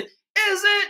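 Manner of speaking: shrill, very high-pitched squeaky voice. Explaining how to reply, the speaker demonstrates it in a shrill, high-pitched voice. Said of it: "in a really shrill, high pitched voice".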